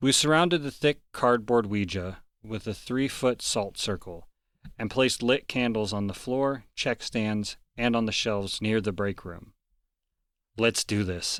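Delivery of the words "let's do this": forced cool, slower. Narrator about to start a Ouija session, trying to act cool. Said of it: "trying to act cool".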